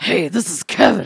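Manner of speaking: very loud, rough-edged, creaky put-on character voice. Asked to do a caller's voice: imitating Kevin's voice. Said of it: "Do your Kevin voice".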